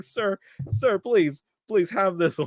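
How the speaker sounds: put-on trembling, pleading voice. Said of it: "He's literally just shaking like this".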